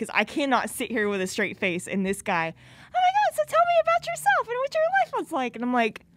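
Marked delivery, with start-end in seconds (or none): 2.5-5.5 man's voice pushed very high. Retelling what a guy from a dating app said, imitating a very high voice. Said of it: "That's how high his voice was".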